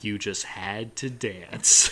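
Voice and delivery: deep, breathy, low-pitched voice. Retelling a TV scene where Robert speaks to him, in deep Brad Garrett voice. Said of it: "in that deep Brad Garrett voice".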